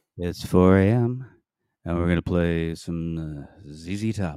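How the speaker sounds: late-night FM DJ voice. Playing with the mic while a co-host comments: late-night fm dj voice. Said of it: "This is my FM voice".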